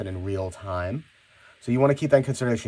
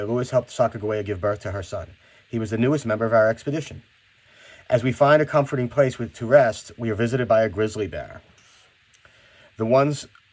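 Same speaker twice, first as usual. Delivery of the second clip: plain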